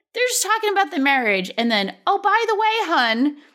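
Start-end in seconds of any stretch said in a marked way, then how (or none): 2.0-3.3 put-on down-home accent, higher pitch. Retelling what a woman at a cafe said: imitating a down-home accent. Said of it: "it wasn't a New England accent, but that's my, like, down home people".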